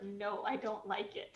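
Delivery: put-on small child's voice, dropped low, complaining. Reacting to a character's death, imitating a toddler. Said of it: "In the words of my toddler".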